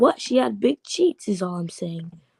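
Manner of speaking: ordinary delivery, nothing marked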